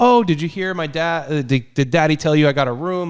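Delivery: put-on overly sweet politeness. Retelling how Kirsty comes in at the movie's start: imitating Kirsty being super nice. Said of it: "she was trying to be super nice".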